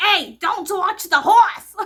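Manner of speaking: put-on shrill, very high, very loud Boston accent yell. Retelling again what the cop from Boston said, in a Boston accent. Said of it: "or with a Boston accent".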